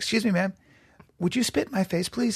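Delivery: mock courteous, well-mannered, really polite tone. Retelling a friend's request to a woman, imitating a friend speaking really politely. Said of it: "Really polite".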